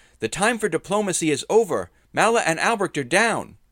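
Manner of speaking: shrill, very loud, high, full-volume cry. A character hurls scorching rays at a warrior and shouts. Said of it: "and shouted".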